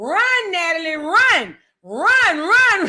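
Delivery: mock scream, very slow and drawn out. Retelling watching a video of a fight: imitating screaming at the camera. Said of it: "I was screaming at the camera".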